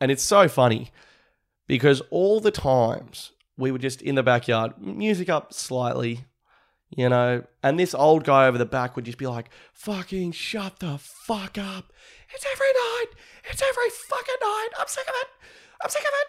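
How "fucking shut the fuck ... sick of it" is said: put-on very high, escalating, furious angry yelling. Retelling the old guy over the back complaining about backyard music, mock-angry yelling. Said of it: "the pitch of his voice would just go up".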